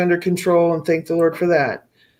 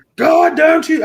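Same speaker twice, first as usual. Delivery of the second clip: put-on scream, higher and louder; 10 semitones higher, 5 dB louder than usual. Retelling that night of praying for her son: imitating her own screaming. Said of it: "I was screaming".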